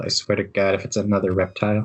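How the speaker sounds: mumbled, half to herself, as an aside. Voicing a character who grumbles about a new arrival: mumbling under her breath. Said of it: "You hear Shade mumble under her breath".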